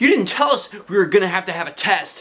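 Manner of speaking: high, freaked-out shouting. Narrator reading a classmate's line as the students react in class, shouting. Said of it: "shouted Neil".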